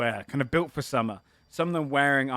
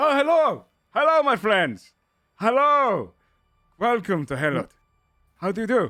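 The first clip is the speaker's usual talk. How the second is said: hearty, loud, high-pitched shout; 8 semitones higher, 6 dB louder than usual. Voicing a character who jogs toward the players: shouting a greeting in character. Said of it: "kind of shouts out to you like".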